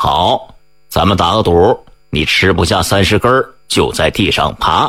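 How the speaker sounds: plain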